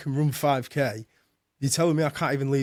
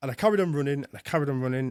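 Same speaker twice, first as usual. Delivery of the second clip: ordinary delivery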